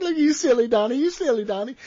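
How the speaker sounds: put-on giddy playful teasing. Telling a story, the speaker quotes Reggie teasing him: imitating Reggie being giddy. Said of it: "Reggie comes over all like giddy".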